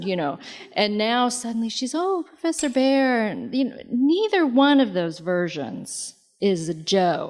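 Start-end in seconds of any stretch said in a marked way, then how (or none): 2.0-3.3 lovestruck, very high, swooning voice. Describing a character swooning over a professor, speaker imitates her very high voice. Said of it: "her voice gets very high".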